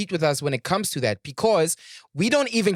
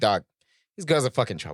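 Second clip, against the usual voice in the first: half-joking cautioning tone with a teasing edge; 8 semitones lower than usual. Retelling mom's warning about girls: imitating mom warning. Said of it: "her way of just telling me, like".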